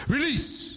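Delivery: voice pitched way up into a whoop. Speaker showing listeners how to shout the word out: rebel yell. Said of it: "You got to say it with a rebel yell".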